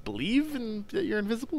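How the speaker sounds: very high, unsure voice.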